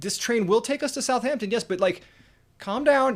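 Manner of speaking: put-on exasperated tone. Retelling what you finally said to a woman screaming at you on a train, exasperated. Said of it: "And I'm just finally going".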